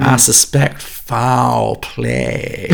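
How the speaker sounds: very slow, deep Texan drawl, "foul" drawn out. Recalling an actor's accent and quoting his line in a Daniel Craig Texan accent impression. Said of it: "Chocolate dripped American Texan accent".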